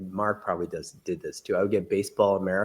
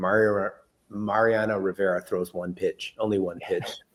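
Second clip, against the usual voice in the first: normal talking voice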